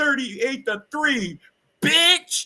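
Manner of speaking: put-on, very high, heated, furious tone. Retelling what an angry guest said when asked for a score prediction: imitating someone mad. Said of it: "She was so mad".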